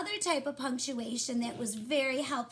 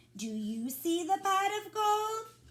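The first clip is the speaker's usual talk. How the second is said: questioning-sounding tone, rising at the end; 7 semitones higher than usual. Reading a story aloud to boys and girls, asking with a question in the voice. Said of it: "I should have a question in my voice".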